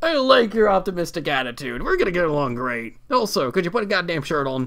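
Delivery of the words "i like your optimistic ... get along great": sarcasm through the whole line, insincere. Speaking in character to someone in a restroom: sarcastic. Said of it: "I'm, of course, being sarcastic".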